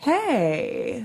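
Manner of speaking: long, drawn-out, dragged "hey". Describing how a man answered every phone call, the speaker retells a dragged-out hey. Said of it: "A long pause, a dragged out hey".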